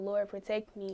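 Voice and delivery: ordinary talk, nothing marked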